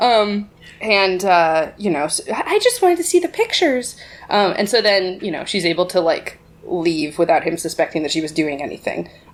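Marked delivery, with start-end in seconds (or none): 2.3-4.0 put-on very high, meek, innocent, timid maiden voice. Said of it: "timid maiden act".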